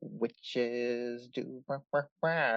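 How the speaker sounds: very quiet, low, very slow eerie murmur. Retelling a woman's bedtime witch story to a grandson, imitating her talking very slowly. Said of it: "She's like talking very slowly".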